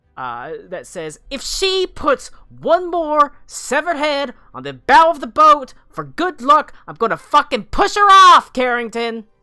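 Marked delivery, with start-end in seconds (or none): 1.3-9.3 piercing, very high, very loud shrill furious shriek. The narrator voices a shout from the boat's top deck: Nipsey Brightbuckle's shrill angry voice. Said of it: "a slightly shrill voice from the top deck".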